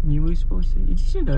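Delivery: put-on soothing, high, sing-song cooing baby talk.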